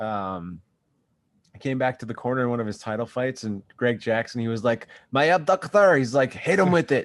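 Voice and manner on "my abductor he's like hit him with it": put-on French-Canadian accent, higher and louder. Retelling what was said in the corner: GSP impression. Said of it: "that was a good G S P impression".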